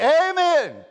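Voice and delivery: hearty, high, loud, ringing, belted amen. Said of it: "you ought to be able to say".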